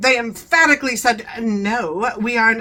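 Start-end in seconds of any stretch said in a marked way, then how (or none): 1.4-2.6 put-on stuck-up, superior, snobby, haughty tone. Retelling their emphatic reply about the shut-off water, mock-snobby voice. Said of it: "kind of snobby. So that's why I'm doing that voice".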